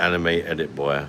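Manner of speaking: plain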